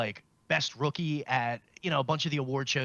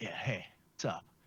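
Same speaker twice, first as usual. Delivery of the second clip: mock tough-guy cool voice, lower and quieter; 5 semitones lower, 8 dB quieter than usual. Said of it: "trying to come off as tough".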